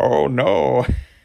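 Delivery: silly villain voice. Speaker describes a character who always cracks them up, doing Bane voice. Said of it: "he's always talking like this".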